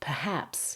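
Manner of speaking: "perhaps" with weak per- and strong -haps. Lesson, asking listeners to hear the stress in a word: stress on second syllable of perhaps. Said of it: "It's on the second syllable. The first syllable becomes very weak".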